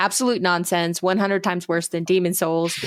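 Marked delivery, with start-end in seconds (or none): none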